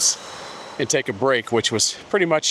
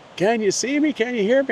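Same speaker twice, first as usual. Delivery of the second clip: very high-pitched yell, as across a distance; 12 semitones higher than usual. Recalling a woman calling from the other cliff with her microphone on: imitating someone yelling from afar. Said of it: "she's yelling like".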